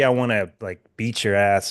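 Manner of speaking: ordinary talk, nothing marked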